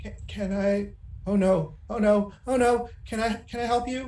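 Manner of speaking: high, frightened woman's voice, stumbling over words. Game narrator voicing a halfling woman approaching the party, scared voice. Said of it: "wide eyed and sort of scared".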